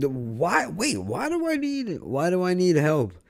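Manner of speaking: imitated yell. Retelling an argument, repeating his own reply: imitating himself yelling. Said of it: "Now you're yelling".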